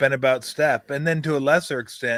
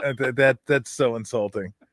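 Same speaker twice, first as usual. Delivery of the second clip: usual speaking voice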